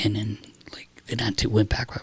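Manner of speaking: soft, unvoiced whisper.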